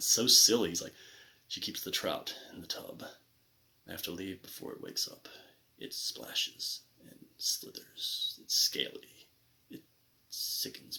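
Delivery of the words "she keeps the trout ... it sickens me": soft, dead-serious whisper. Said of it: "he's saying it so seriously".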